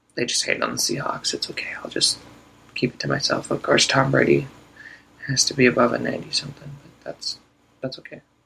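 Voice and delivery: quiet, hushed whisper. Talking football while trying to keep quiet, whispering. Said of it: "I am whispering because I'm trying to be quiet".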